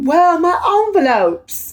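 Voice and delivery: put-on British accent, very high. Mocking a woman from the story, the speaker quotes her in a fake British accent. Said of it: "this bitch had a fake British accent".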